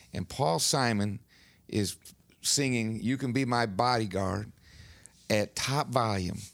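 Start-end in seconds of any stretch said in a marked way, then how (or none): none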